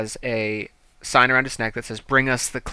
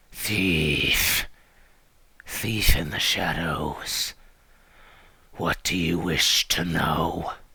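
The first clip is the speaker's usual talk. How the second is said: low, slow speaking-corpse voice; 6 semitones lower than usual. Voicing a corpse that snaps its head up at a player: speaking corpse voice. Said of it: "The corpse snaps its head up and looks at you, Aram, and says".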